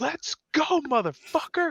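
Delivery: mock shrill, high, excited, triumphant yell. Recalling watching a match replay in a hotel room: retelling a yell. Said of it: "I'm yelling this".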